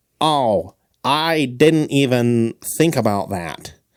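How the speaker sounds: very slow, drawn-out put-on nerdy voice. Acting out how a nerdy guy would respond: nerd voice. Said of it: "You like my nerd voice?".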